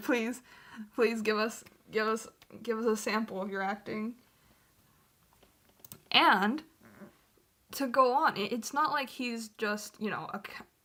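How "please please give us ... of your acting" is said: earnest, beseeching, repeated pleading. Retelling how he begs the players for a sample: imitating someone begging. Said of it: "begs them".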